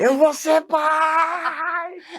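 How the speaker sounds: mock very high, slow joyful yell, "pai" stretched. Retelling reading a positive test result in the street: retelling own past shout.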